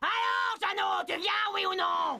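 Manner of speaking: shouting in ogress voice. Playing an ogress calling the boy from the shore: ogress shouting. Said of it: "c'est l'ogresse qui crie là-bas".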